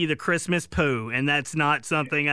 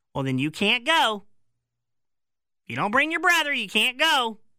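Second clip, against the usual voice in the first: unhinged, crazy-sounding voice; 3 semitones higher than usual. Acting out a family argument, the speaker does a crazy mom voice. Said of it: "It's my crazy mom voice".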